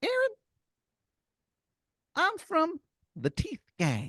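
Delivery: high, bouncy voice. Telling a made-up story, voicing a grinning talking tooth: Timmy the Tooth voice. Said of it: "And he goes".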